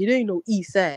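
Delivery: ordinary delivery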